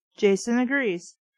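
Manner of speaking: ordinary talk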